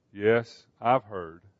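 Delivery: soft, quiet voice. David, on his palace balcony, answers Joab without turning, replying quietly. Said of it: "he replied quietly".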